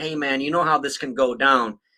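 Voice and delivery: ordinary talk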